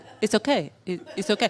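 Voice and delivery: put-on Israeli-accented speech. Retelling a man's habit with Israelis, speaker quotes him: Israeli-accented 'it's okay'. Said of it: "it got more and more Israeli in accent".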